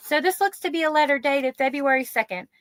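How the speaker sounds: lifted female register. Recounting what a woman said, to keep speakers apart: higher voice for her. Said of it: "I guess I'll do a higher voice for her".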